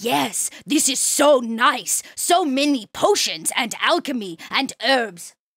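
female orc voice. Narrating a game scene as the druid walks in: female orc voice. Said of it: "you hear this orc female go".

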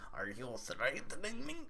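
cartoon character voice. Reading a line for Zeldris in a Beavis Cornholio voice. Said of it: "I'm going to kind of read this like Beavis when he goes into Cornholio mode".

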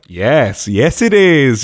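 very slow, patronising, condescending, falsely reassuring tone. Retelling what a nurse said after sedation: imitating a condescending nurse. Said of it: "that sort of condescending nurse ... voice".

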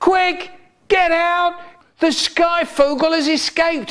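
shrill, very high, panicked scream. Reading a story aloud, a man runs onto the stage in front of the curtains: screaming. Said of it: "and he screamed".

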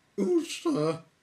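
squeaky little voice, very high and loud. A voice behind a small red door answers the knock in a squeaky sort of voice. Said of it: "squeaky sort of voice".

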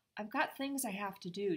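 ordinary delivery

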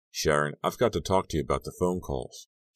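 ordinary talk

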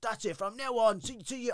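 mock-annoyed stuttering outburst. Retelling what a man on parade said to him, mock-annoyed stuttering. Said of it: "he's real kind of stuttering because he's annoyed".

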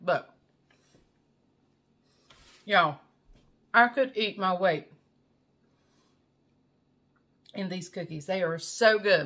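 speaking with a full mouth while eating. Eating cookies while talking to viewers, talking with mouth full. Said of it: "talking with my mouth full".

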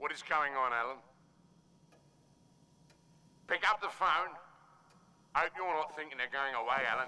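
mildly upset tone. A caller demanding that a man pick up the phone, a bit upset. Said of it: "He sounds a bit upset".

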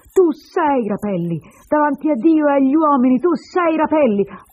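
full-throated, loud, high yelled delivery. A woman confronts the narrator after he denies his name, shouted. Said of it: "poi gridò".

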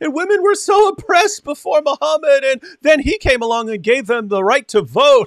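very high, words breaking into laughter. Quoting a video's claim while trying to read it: laughing while talking. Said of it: "I couldn't say it without laughing".

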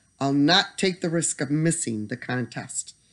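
ordinary delivery, nothing marked

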